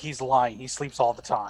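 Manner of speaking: slow, put-on whisper, said as an aside. Voicing a character who tells another character something quietly: whispering in character. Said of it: "Naru just kinda whispers over to Calamity".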